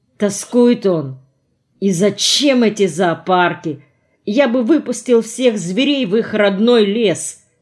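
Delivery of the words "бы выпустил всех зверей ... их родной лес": ordinary delivery, nothing marked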